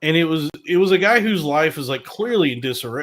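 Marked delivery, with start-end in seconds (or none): none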